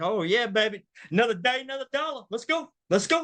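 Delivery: forced, fake excitement, high and fast. Retelling faking it at the start of every week: imitating faked excitement. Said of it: "I just faked it, acted like".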